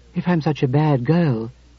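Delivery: ordinary delivery, nothing marked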